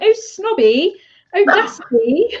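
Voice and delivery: put-on London accent, high-pitched, drawn out very slowly. Retelling a little boy's video where he talks like a Londoner: imitating Smokey's London accent. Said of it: "talking in English like, like a Londoner".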